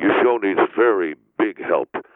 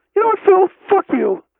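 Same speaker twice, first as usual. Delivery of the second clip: nervous and scared, changed voice; 3 dB louder than usual. After being told his voice changes when scared, cursing at the other man, scared, nervous voice. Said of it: "your voice has changed. It happens when you get scared".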